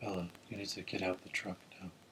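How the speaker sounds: very quiet, low, dead-level flat monotone. Discussing a movie character's way of talking, imitating a flat monotone. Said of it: "very monotone, isn't he?".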